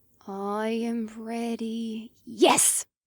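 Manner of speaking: quiet, hushed voice. While stalking a fish, she answers her fishing companion in a hushed voice. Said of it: "She said in a hushed voice".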